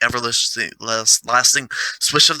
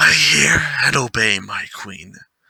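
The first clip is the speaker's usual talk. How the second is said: growling wolf voice, beastlike. Narrator reads the wolf's answer to his queen, growling wolf voice. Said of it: "growled the wolf".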